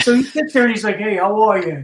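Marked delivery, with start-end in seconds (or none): 1.0-1.9 imitated British accent. Retelling a greeting someone gave backstage: imitating a British accent. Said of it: "he's talking to me in a British accent".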